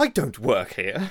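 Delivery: put-on angry tone. Telling how a woman by the table answered her, imitating an angry reply. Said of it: "Like angrily".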